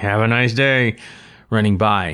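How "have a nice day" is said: sarcastic, mockingly polite tone. Retelling a remark made while running past a man: imitating a sarcastic tone. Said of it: "kind of sarcastically".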